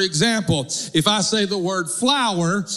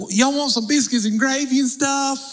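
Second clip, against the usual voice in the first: high, put-on, spot-on Southern mountain accent; 6 semitones higher than usual. Retelling what his wife would say to guests: imitating wife's mountain southern accent. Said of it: "she was just perfect Southern accent, mountain sounding".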